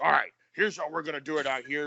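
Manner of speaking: gruff, rough, big-voiced coach voice. Retelling how a former head coach talked: imitating a gruff big voice. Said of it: "gruff, big voice".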